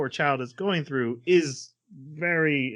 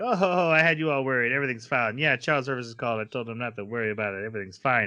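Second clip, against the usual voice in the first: ordinary talk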